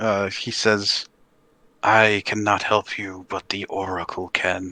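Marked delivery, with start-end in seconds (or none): 1.8-4.7 ghostly, spirit-like voice. Voicing a ghostly visage rising from a giant's corpse: ghost voice. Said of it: "this, like, ghostly visage rises from the body".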